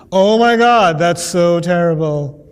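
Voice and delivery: sarcastic mock horror, low, drawn-out dismay. Explaining how true statements get said sarcastically, giving a sarcastic example. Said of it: "you say true statements sarcastically".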